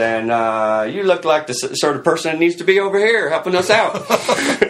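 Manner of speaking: Texas drawl, pitched way up high. Retelling a phone call offering a job: imitating Monty Young's Texas drawl. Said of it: "this, you know, Texas drawl".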